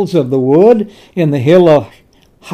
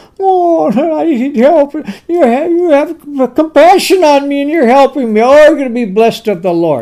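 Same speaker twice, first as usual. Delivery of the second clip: high, pitiful whine like a wounded pig; 8 semitones higher than usual. Retelling King Saul's words to those with compassion on him, mocking Saul as a wounded pig. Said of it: "He sounds like he's a wounded pig in a mud hole".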